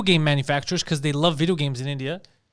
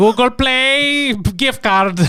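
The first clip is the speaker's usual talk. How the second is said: loud, high fake Indian accent, "play" drawn out; 7 semitones higher, 6 dB louder than usual. Joking with others about bad accent impressions, a speaker does a put-on Indian accent. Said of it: "Like that's what it sounds like".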